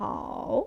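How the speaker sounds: dipping third tone on hao, down then up. Teaching how to say the third tone on the syllable hao, dipping third tone. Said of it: "First go down and then go up".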